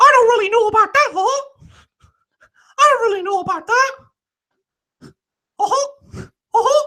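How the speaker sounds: very high, squeaky, cross voice. Reading a chat comment, then doing an angry Mickey Mouse voice. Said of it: "you sound like Mickey Mouse when you're angry".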